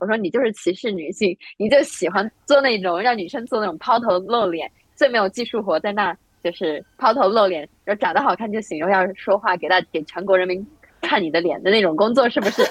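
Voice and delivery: ordinary talk, nothing marked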